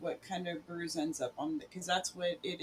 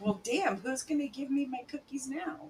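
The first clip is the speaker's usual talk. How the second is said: high, grumbling pet cat voice; 8 semitones higher than usual. Voicing what the cat Bentley would say after a fall: voicing Bentley the cat. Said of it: "Bentley would be like".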